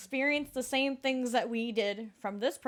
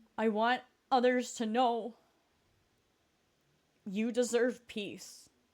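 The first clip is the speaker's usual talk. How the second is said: choked-up voice, catching and breaking with emotion. Addressing video viewers about dealing with PTSD, choked up. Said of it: "I'm getting choked up".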